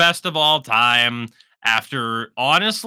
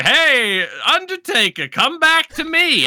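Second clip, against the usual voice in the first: put-on very high, slow delivery in an odd accent; 12 semitones higher than usual. Retelling Paul Bearer coming out to call Undertaker back, as a Paul Bearer impression in an unplaceable accent. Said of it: "I don't know what that accent is".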